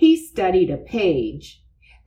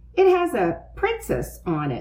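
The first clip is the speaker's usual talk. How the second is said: ordinary delivery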